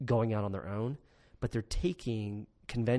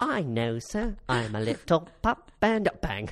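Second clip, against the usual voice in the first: put-on very slow, drawn-out, high, loud French boy voice; 5 semitones higher, 6 dB louder than usual. Mocking a scene from Les Mis: imitating the little boy. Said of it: "When the little boy's like".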